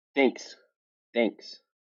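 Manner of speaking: New Zealand accent, "thanks" with a shifted toward e. Showing how New Zealanders say thanks: New Zealand accent. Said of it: "And in New Zealand?".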